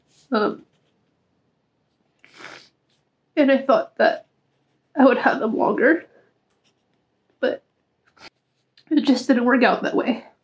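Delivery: crying while talking. Talking about losing a companion of thirteen years: crying while talking. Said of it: "I wasn't crying too much".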